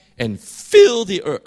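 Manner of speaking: high voice, cracking. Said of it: "Sorry, my voice".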